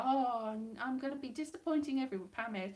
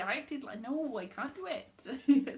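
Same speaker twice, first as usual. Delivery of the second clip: ordinary talk, nothing marked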